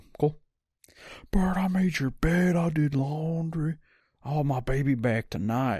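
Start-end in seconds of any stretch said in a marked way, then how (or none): 1.3-5.8 yelling, higher pitched. Retelling a phone call where mom starts yelling: imitating mom yelling. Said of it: "she starts yelling at me too".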